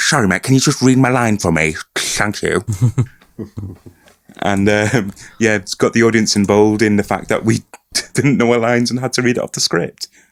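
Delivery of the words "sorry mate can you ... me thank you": mock lisping, as if through fangs. Retelling asking someone onstage to read their line, imitating a lisp with fangs. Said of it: "so I had to talk like this with fangs".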